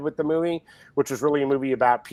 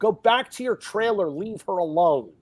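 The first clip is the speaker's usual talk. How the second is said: put-on barking, scolding yell; 6 semitones higher than usual. Retelling ordering a man away from actresses on set: imitating own past yelling. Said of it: "where I'm yelling at him".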